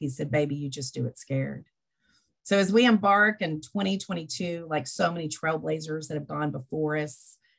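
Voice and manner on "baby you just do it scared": put-on confident, loving, tender tone. Retelling a mentor's encouraging words: imitating a confident, loving tone. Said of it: "he said with great confidence and love".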